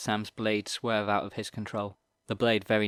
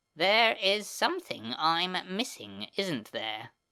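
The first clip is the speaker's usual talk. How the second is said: hiss pushed through words, pitched up, swooping line; 9 semitones higher than usual. A narrator reads a character's line hissed at the boys: hissing. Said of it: "he hissed at them".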